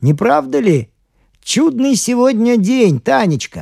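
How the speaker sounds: loud, very high-pitched voice. A father calls toward the open window to his daughter Tanechka, speaking loudly. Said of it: "громко проговорил".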